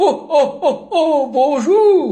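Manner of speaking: put-on old man character voice. Answering a phone call from a child, a caller speaks in old bearded man voice. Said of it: "c'est bien la voix du vieux barbu".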